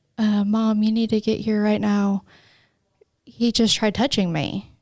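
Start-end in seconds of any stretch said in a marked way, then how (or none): none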